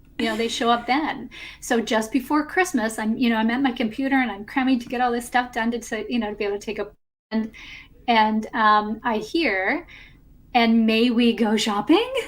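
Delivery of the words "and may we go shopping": playful voice with raised, lifted pitch. Retelling a voice heard while cramming at the computer: imitating a playful, up-leveled voice. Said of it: "In this playful, kind of up-leveled voice".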